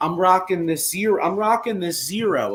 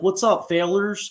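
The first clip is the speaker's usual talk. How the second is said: imitated southern twang accent. Imitating a guy from tennessee as he calls up the group, imitating a southern twang. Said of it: "that southern accent, that southern twang".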